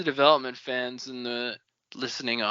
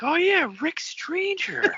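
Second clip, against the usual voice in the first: put-on excited voice, higher pitch. Acting out a book character reacting to a name: imitating an excited Wax. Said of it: "Wax is getting excited".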